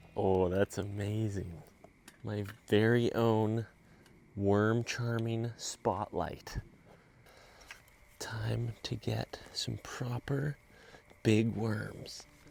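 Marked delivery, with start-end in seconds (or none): 2.3-12.3 hushed whispering. Out after dark with a homemade spotlight looking for worms, whispering. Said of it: "I don't know why I'm whispering".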